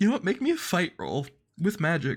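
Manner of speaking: teary, close to crying. Player in an emotional group session calling for a roll, crying. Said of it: "God, I'm like crying".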